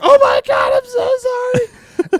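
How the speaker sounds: mock very slow, high, terrified sobbing. Retelling a sister's reaction after the van ran over a trampoline, imitating her crying in terror. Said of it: "my sister like terrorized, crying".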